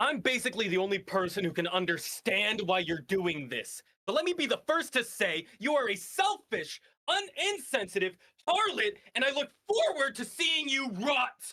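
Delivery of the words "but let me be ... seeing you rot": acted angry yelling, rising and high-pitched. Voicing a character throwing punches at an enemy: in-character shouting. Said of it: "I'm here shouting".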